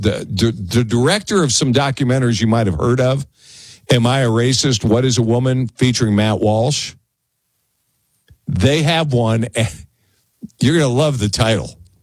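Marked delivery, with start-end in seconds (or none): none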